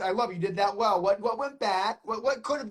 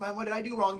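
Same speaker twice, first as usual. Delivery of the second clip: ordinary talk, nothing marked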